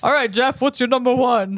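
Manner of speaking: manly put-on street-style man's voice. Asking Jeff for his number one in a put-on man voice. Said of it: "that's [name]'s man voice".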